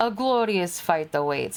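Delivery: bad, clumsy, put-on, drifting Transylvanian accent. Voicing a character's battle line while struggling with the accent: bad Transylvanian-sounding accent. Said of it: "I feel like I'm making him fucking Transylvanian".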